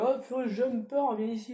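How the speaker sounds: called-out voice.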